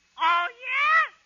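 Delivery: put-on high, loud child voice. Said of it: "I'm gonna play both parts".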